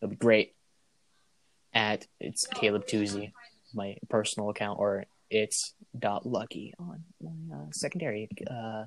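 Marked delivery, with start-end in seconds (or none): 1.7-8.8 quiet, slow mumbling. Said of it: "Why you mumbling?".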